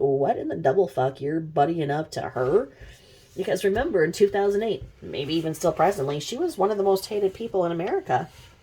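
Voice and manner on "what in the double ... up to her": play-acted, stunned, incredulous outrage. Retelling the real sister's reaction to the letters: imitating outrage. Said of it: "the real sister is like".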